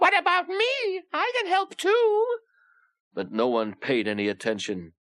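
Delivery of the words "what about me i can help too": small, squeaky, very high-pitched voice. Narrator reads the big engine's tender crying out; tiny, high-pitched voice. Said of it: "in a tiny, high-pitched voice".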